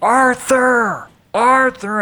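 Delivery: put-on, very high, full-voiced scream. Recounting spotting someone deep in a crowd, retelling screaming a name. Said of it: "and I'm screaming his name".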